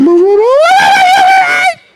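acted siren wail, very high and very slow. Retelling a child telling mama she was right: imitating a wailing cry like an ambulance. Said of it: "You sound like an ambulance".

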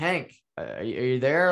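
ordinary delivery

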